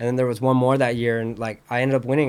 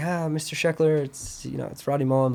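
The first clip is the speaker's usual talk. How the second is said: gentle, hushed, composed, very soft voice; 3 semitones higher, 4 dB quieter than usual. Retelling a call to the speaker's dad; Rodney Mullen's super calm, soft voice. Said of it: "like in his voice, like super calm, super soft".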